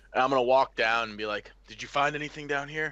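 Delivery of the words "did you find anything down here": high, loud stage whisper. Speaking in character to find a hidden companion: loud whisper. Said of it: "In a kind of, like, a, a loud whisper".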